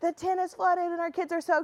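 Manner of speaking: high-pitched frantic voice. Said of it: "I'm frantically trying to explain everything".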